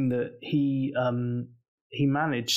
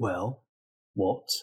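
put-on terse character voice, lower pitch; 5 semitones lower than usual. Retelling a scene where Vince gave only one-word answers: imitating Vince. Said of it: "He was like".

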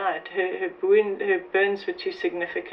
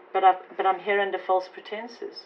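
ordinary delivery

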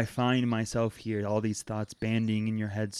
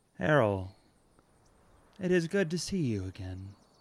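eerie, strange, almost metallic, echoing voice; 3 semitones higher than usual. Narrator voices a silent woman speaking inside the listener's head, almost metallic. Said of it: "It's almost metallic, and it's inside of your own head".

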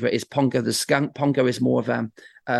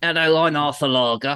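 put-on voice of a slightly older man; 3 semitones higher than usual. Performer showing the voice made for their old man character: Arthur Lager older-man voice. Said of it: "tried to make it sound a bit older than myself".

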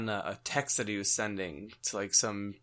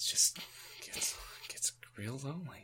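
mimicked mutter under breath, much quieter, higher, slower; 3 semitones higher, 10 dB quieter than usual. Retelling what a guy said in a conversation, slightly under his breath. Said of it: "the guy still is like slightly under his breath".

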